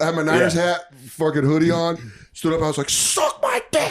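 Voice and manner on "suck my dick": mock, very high-pitched yell. Recounting standing up at a Niners game in the third quarter; retelling a yell. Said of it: "I stood up and yelled that".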